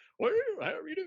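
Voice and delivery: very high, loud, put-on old geezer voice. Recalling how a man put on different voices, here the old geezer voice. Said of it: "he put on the old geezer".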